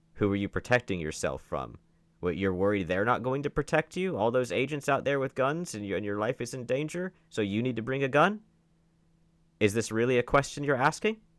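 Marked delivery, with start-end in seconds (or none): 0.2-8.4 laid-on, sarcastic, rapid-fire needling delivery. Questioning why anyone would bring a gun among agents: sarcastic questioning. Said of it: "'Cause I'm asking it sarcastically".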